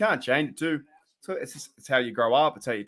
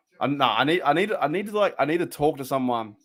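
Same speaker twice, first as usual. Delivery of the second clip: plain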